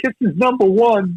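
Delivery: put-on child's heavy Brooklyn accent, pitched high. Retelling own line as an eleven-year-old kid in a documentary: imitating own kid self, thick Brooklyn accent. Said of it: "the eleven-year-old kid with the thick Brooklyn accent going".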